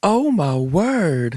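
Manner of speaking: heavy Southern accent, stretched word. Imitating the other speaker on request, in an exaggerated Southern accent. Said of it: "can we hear your southern accent? If you were going to imitate me".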